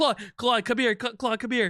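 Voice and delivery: high, rushed, frantic, freaking-out delivery. Voicing Tommy calling Claude over at the ship's wheel: panicky, freaking out. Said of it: "he is freaking out".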